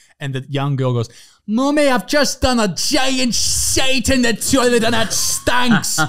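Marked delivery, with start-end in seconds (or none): 1.5-6.0 put-on Scottish child's voice, very high and loud. Retelling a young girl's words from a TikTok: imitating a Scottish accent. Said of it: "that is how they talk in Scotland".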